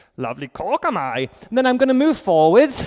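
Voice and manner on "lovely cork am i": low, slow, deliberate drawling character voice. Guiding a half moon pose with a brick, doing a Yoda impression. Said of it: "That was my attempt at a Yoda impression".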